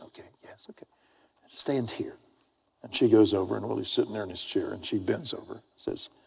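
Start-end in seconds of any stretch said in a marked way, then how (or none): 0.0-2.1 hushed, soft, breathy whisper under the breath. Retelling how a lady at the club spoke: imitating someone whispering. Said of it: "And she's whispering".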